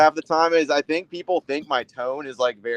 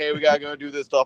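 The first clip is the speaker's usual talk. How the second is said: ordinary talk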